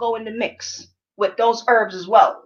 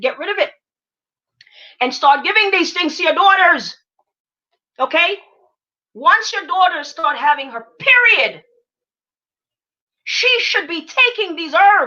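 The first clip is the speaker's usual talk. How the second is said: urgent high-pitched shouting; 6 semitones higher, 3 dB louder than usual. Addressing the audience and trying to make them listen, yelling. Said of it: "I know I'm yelling at y'all".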